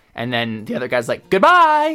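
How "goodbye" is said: put-on lilting voice with pitch rising at end. Imitating a podcast host's sign-off: imitating a goodbye with a rising lilt. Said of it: "with a lilt, like, that goes up".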